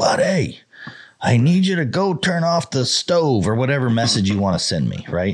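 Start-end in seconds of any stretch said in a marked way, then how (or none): 0.0-3.5 very high-pitched, stretched, drawn-out scream. Explaining a screaming crowd, the speaker acts out someone yelling a message at him. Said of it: "scream and yell at me and go".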